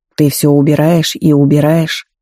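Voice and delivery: ordinary talk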